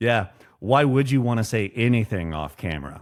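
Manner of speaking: very sarcastic, dry, put-on tone. Quoting a favorite line from a movie, retelling a sarcastic remark. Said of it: "very kind of sarca- sarcastically".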